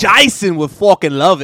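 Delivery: bellowed, very loud, bad Australian accent. Asked for the real British opinion, doing a bad Jason Statham impression. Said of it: "That was very Australian. That was bad".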